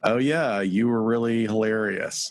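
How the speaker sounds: pointed, knowing, meaningful, loaded tone. Retelling what people said the morning after a blackout: imitating a knowing, loaded tone. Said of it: "with that tone of voice".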